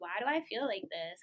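ordinary delivery

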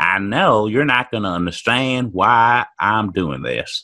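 put-on Southern accent. Reading a woman's quoted words aloud in a put-on Southern accent. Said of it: "let's pretend she's from the South".

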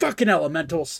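ship captain voice in an outburst. Voicing a ship's captain clinging to the helm: yelling captain. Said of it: "and he just yells".

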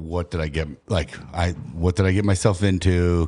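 ordinary talk, nothing marked

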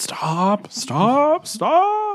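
shrill, very high, swooping, drawn-out anime villain yell. Describing him turning to shoot at the barrier, retelling Vegeta's yell. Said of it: "And he's yelling".

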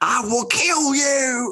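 mock shrill, very high, slow, drawn-out, menacing scream. Retelling Leanne popping up in the basement: imitating Leanne screaming. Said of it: "screaming in the basement".

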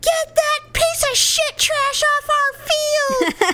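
high, slow, rowdy bellowing heckle.

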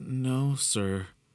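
quivering, trembling voice. Narrator reads the first-person character's reply to a man's question, quivering. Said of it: "I quivered".

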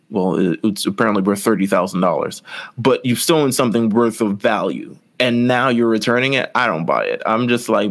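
normal talking voice

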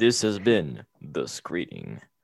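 really deep, slow put-on voice. Suggesting how to sign off the episode, said in a really deep voice. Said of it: "like in a really deep voice".

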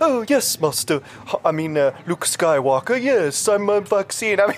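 put-on robot voice. Joking that Moderna sounds like a future person, the speaker does a C-3PO voice. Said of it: "like C-3PO".

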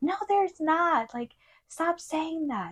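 acted angry voice, very high-pitched and slow. Retelling how Richard insisted no dog was there: imitating Richard getting angry. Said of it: "really, really angry".

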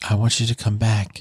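mock whispering. Retelling how the idol spoke into a fan's ear: imitating a whisper. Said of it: "whispers in her ear".

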